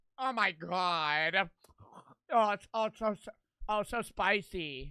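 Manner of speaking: very slow, over-the-top suffering moan, drawn-out whining. Retelling how someone in the video reacted to the spice: mocking imitation of overdramatic suffering. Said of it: "And this motherfucker goes".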